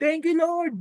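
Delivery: put-on shrill, loud joyful cry, pitched very high. Retelling shouting thanks into a pillow: retelling own loud shout. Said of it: "tas sumigaw ako ng malakas".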